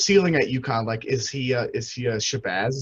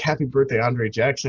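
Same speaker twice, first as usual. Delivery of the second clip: ordinary delivery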